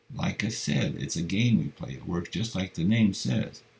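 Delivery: plain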